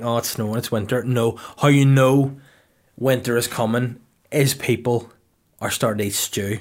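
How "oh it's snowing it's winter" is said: ordinary talk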